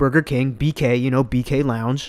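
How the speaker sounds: normal talking voice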